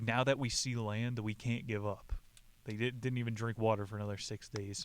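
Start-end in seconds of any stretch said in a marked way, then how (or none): none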